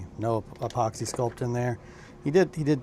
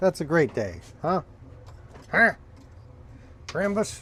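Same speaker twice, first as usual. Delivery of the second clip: pitched-up, projected yell; 6 semitones higher than usual. Planning days of sculpting aloud, yelling. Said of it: "Sorry, I'm yelling".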